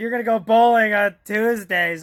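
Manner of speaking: put-on drunk slurring. Retelling a scene, imitating a character talking drunk: imitating Jack talking drunk. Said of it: "all drunk".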